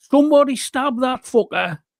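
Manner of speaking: imitated shouting. Retelling a film scene where a man shouts at someone: imitating a shout. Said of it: "and he shouts".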